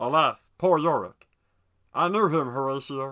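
loud, belted cartoon-character voice. Showing what Meatwad doing Shakespeare would sound like: Meatwad voice. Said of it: "if Meatwad did Shakespeare".

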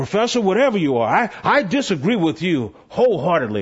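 rough, gruff, resistant voice. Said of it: "he's all rough and gruff".

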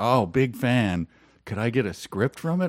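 ordinary delivery

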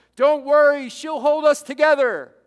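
very loud emphatic yell. Retelling a film scene, answer Princess Leia's intercom call about lost controls, as Han Solo yelling, imitated. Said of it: "he yells out".

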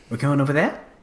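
New Zealand lilt with rising upspeak on "there". Quoting a woman's very kiwi inflection: rising question inflection on 'there'. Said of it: "Everything's a question. ... It always ends up with like a question. Very Kiwi".

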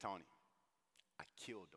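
mock weepy, grieving, sorrowful tearful voice. Imagining the Apostle Paul answering about Stephen: imitating Paul in tears. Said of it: "with tears in his eyes".

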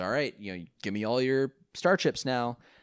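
normal talking voice

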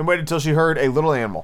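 plain reading voice

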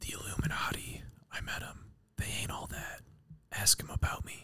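hushed, breathy whisper all the way through. Reading out a series of tweets as the writer: whispering. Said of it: "so the whole quote I'm whispering".

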